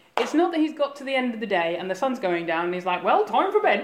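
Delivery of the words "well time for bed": high, homely put-on Scottish farmer voice. Acting out Abraham going off to bed: Scottish farmer voice. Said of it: "he talks like a farmer, a Scottish farmer".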